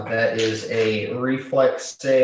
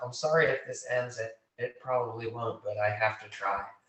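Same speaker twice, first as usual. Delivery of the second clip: very quiet, barely audible, under-the-breath mutter; 11 dB quieter than usual. A player's character looks down at another character and speaks just under his breath. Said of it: "just under my breath".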